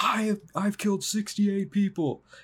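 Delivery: mock yelling right out, high-pitched. Retelling how Jack yells to a cop that he wants caught: imitating Jack yelling. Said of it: "is literally yelling".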